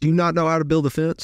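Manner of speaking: put-on scornful, contemptuous yelling telling-off. Retelling a boss who thought him an idiot: imitating someone yelling. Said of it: "she's yelling at me like I'm an idiot".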